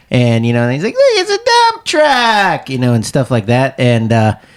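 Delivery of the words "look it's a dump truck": play-acted very high, swooping, all-excited exclamation. Retelling a joke about Blippi at construction sites: excited Blippi impression. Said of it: "he gets all excited, and he's like".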